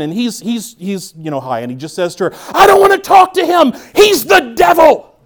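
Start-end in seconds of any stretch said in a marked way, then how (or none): 2.5-5.0 very high, shrill, very loud full-blast yelling. Retelling what a man in a family that yells said on the phone call, imitating someone yelling. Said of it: "a family that constantly communicates by yelling".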